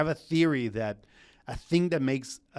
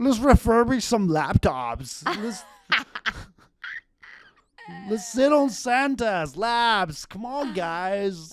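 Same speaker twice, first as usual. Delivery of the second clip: very high put-on American bro accent, drawn-out "guys"; 9 semitones higher, 3 dB louder than usual. Speaker shows off an accent bit to the others; American guy accent. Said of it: "I can do an American guy".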